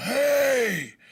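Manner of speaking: high, loud, big bellowing yell.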